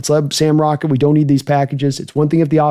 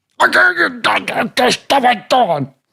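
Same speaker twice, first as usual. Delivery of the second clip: put-on gravelly voice, pitched higher; 9 semitones higher than usual. Answering a chat suggestion as a strength coach: Nick Nolte impression. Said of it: "That's my Nick Nolte impression".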